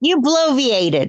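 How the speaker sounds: speaking loudly. Answering another speaker during a heated argument: raised voice. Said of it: "I didn't mean to raise my voice".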